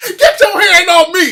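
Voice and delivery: shrill, very loud, high, drawn-out yell. Retelling a man running around yelling so cops hear, retelling a loud yell. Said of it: "start la- yelling loud".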